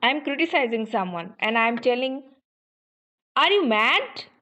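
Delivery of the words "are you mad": pitch rising steadily through the word mad. Showing how to criticize someone with a question, use a rising tone. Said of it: "Here I am using rising tone".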